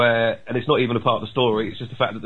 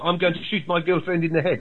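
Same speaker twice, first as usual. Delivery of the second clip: put-on, pitched-up South African accent; 6 semitones higher than usual. Explaining that a character is from South Africa, showing how they speak: South African accent. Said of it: "South African people speak a bit more like this".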